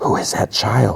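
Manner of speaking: hushed stage whisper, under the breath. Retelling a scene in which one character whispers to another: imitating a whisper. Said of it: "And then she whispers".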